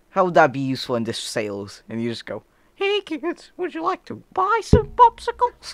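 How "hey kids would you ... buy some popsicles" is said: very high, loud cartoon character voice. Asked how the skill helps in sales, doing a Herbert from Family Guy voice. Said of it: "You can sound like Herbert from Family Guy?".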